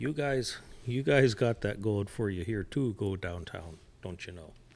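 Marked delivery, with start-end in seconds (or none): 3.0-4.5 put-on Minnesota accent, lower and quieter. Trading Minnesota sayings in conversation, imitating a Minnesotan accent. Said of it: "That's a Minnesota".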